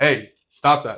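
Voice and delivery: sharp, barked, slow, loud scolding.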